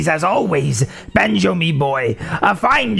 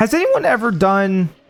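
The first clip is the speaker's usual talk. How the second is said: voice breaking, cracking up high; 5 semitones higher than usual. Starting a question about a game challenge, voice cracking. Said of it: "I don't know why my voice cracked like that".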